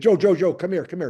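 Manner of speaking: play-acted, loud hollered shout. Player recalling the goalie calling him over mid-game, retelling a holler. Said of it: "so Bernie hollers to me".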